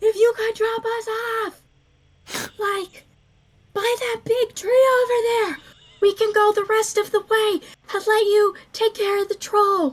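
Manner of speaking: loud, high-pitched yelling shout. A game master voices the cleric carried through the air, as Adina shouting over the wind.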